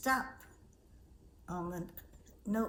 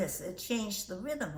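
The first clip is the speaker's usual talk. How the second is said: ordinary talk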